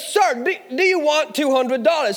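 put-on American accent. Retelling what a voice asked him: american accent. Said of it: "forgive my American accent".

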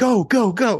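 put-on shrill, urgent yelling, pitched way up. Retelling how a man at the hotel started yelling at him to go: retelling a yell. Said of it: "He starts yelling".

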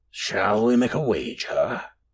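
low, rasping, raspy tone. Narrator voicing a silent man who finally speaks, low, rasping voice. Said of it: "He eventually spoke in a low, rasping voice".

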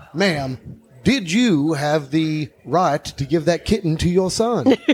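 put-on Savannah Southern accent. Imagining a court hearing, the speaker voices a questioner in a Savannah Southern accent. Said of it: "like with a like Savannah accent".

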